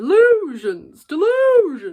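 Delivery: put-on shrill, loud, high voice with a Southern accent. Quoting a movie line around the house in Robert Pattinson's Southern accent. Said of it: "I just keep doing the Southern accent".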